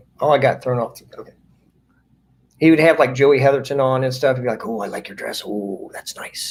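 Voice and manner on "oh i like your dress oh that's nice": sleazy, pervy, breathy near-whisper. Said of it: "he always sounded pervy".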